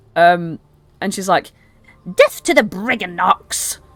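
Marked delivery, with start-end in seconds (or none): 2.2-3.8 bitter, wrathful, seething, furious delivery. Voicing a queen who hurls a rock over a hill: angry shout. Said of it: "as she's so angry".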